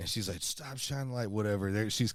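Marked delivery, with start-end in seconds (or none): 0.4-1.3 high-pitched shouted yell. Retelling what a woman holding a pistol shouted at them, retelling a yell. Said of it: "she's yelling".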